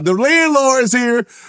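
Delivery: high-pitched, slow yelling. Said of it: "I used to just yell that shit".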